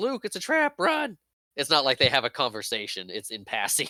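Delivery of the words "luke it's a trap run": acted piercing, very high-pitched, urgent, alarmed yelling. Describing a scene where she warns her friend in passing, retelling a yelled warning. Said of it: "and she yells".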